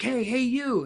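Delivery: put-on very high, loud shout. Retelling how a skier came up and started yelling: imitating someone yelling. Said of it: "starts yelling at me".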